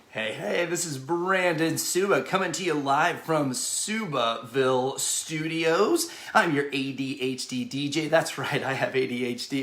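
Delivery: plain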